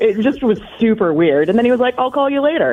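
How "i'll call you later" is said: casual, breezy, offhand, nonchalant, pitched up. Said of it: "he just kind of wrote it off real nonchalant".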